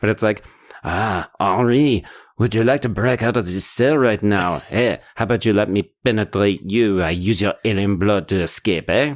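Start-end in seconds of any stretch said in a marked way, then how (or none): 1.4-9.2 put-on French accent. Imagining the aliens' lines as if they were french, put-on french accent. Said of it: "I'm going to do this in a French accent".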